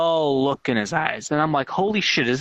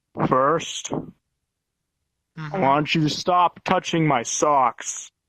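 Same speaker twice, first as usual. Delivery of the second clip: mock slow, deep voice, exaggerated put-on. Retelling the first thing he said, imitating his slow, deep voice. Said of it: "he talks really slow and deep".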